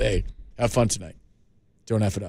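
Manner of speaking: low, deadpan delivery with no expression. Imitating a ballplayer's pregame advice to a rookie: deadpan Brandon Belt impression. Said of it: "That's my Brandon Belt".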